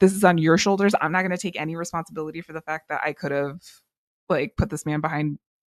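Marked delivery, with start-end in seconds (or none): none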